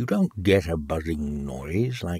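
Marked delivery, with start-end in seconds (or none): none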